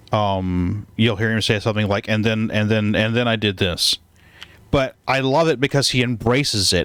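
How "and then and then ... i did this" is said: ordinary talk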